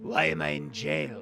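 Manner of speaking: very low, slow, drawn-out lizard creature voice. A player in a role-playing game, locked in a cell, asks why he is there, in a low lizard creature voice. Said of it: "a low, gravelly voice".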